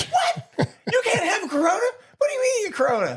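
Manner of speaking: put-on very high, swooping, top-of-lungs incredulous scream. Retelling a man in a bar yelling over a corona order, retelling a shout of disbelief. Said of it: "He's screaming at the top of his lungs".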